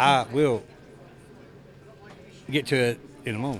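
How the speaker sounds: halting delivery broken by long dramatic pauses. Joking about pausing before speaking: William Shatner halting pauses. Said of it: "I'm doing a William Shatner".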